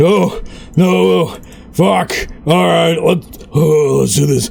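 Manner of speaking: plucky, brutish orc voice. Player voicing their plucky orc brute mid-fight, plucky orc brute voice. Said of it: "this plucky orc brute will be like".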